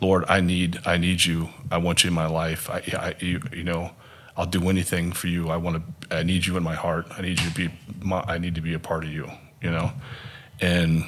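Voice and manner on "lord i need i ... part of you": tearful, crying voice. Retelling own earnest prayer for the first time: reenacting a tearful prayer. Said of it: "as I'm saying that prayer and I'm crying".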